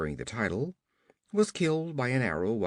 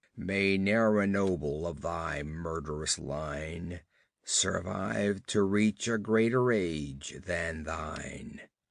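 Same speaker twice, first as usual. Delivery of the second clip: dull, dreadful, terrible-sounding low voice; 5 semitones lower than usual. Narrating a man advancing on the Comte to pronounce a curse, dull yet terrible. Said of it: "pronounced in dull yet terrible accents".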